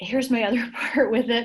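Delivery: words broken up by giggles, talking through laughter. Advising on virtual college visits, laughing while talking. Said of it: "Sorry, I'm laughing".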